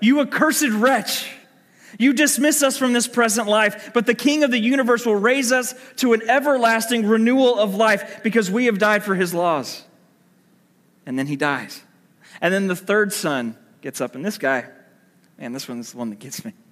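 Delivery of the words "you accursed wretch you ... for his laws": raised, high-pitched shout. Retelling a dying son's last words to the king: retelling a shout. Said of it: "with his dying breath, shouts out".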